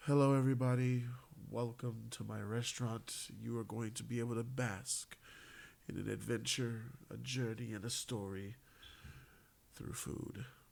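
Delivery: hushed, very quiet, proper manner. Retelling how the head chef greets the guests: imitating the chef speaking quietly. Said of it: "he just speaks so quietly like this".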